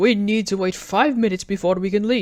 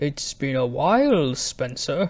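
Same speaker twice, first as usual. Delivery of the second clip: deep voice, much lower; 6 semitones lower, 3 dB quieter than usual. A brake van surprises spencer, greeting him after a while: deep voice. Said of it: "Did your voice get deep all of a sudden?".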